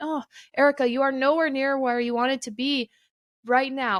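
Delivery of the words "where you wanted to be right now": ordinary talk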